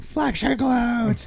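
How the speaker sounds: mock, very high, shrill screaming. Retelling coaching a client on stage: retelling screaming at a client. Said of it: "And I'm screaming at him".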